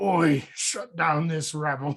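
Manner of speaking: slow, distinct orc overseer voice. Recounting a cut film scene, voicing the overseer orc's line: orc overseer voice. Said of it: "he's got a distinct voice too".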